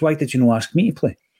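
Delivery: mock deadpan delivery. Recounting a question that put the speaker on the spot, in mock deadpan. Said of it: "And he was like deadpan".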